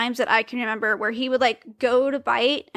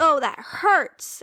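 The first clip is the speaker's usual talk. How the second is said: put-on hurt, pained little cry; 4 semitones higher than usual. Retelling trying to shock the baby, imitating a loud pained cry. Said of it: "and I was loud".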